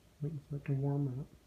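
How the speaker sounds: soft, quiet, hushed talking.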